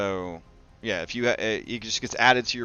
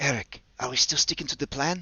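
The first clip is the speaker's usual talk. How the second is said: whispering in a character voice, higher pitch; 5 semitones higher than usual. Voicing a character at a door, asking quietly about the plan: whispering in character. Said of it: "she's gonna whisper to you".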